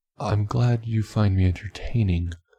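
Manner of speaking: usual speaking voice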